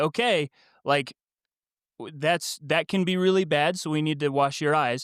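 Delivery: ordinary talk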